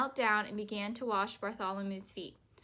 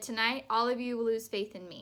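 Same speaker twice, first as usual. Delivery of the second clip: plain reading voice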